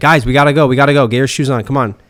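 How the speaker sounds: loud, rushed, impatient, hurried delivery. Demonstrating the voice they use to hurry the kids along, hurried voice. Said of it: "It's our hurried voice".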